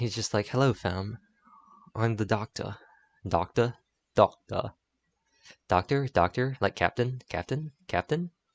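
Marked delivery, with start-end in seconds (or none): 0.5-2.7 put-on British voice, quieter. Imagining the Doctor saying fam: David Tennant as the Doctor. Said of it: "David Tennant comes back and he's like".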